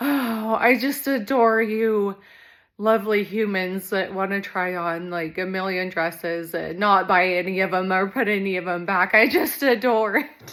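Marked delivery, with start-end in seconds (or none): none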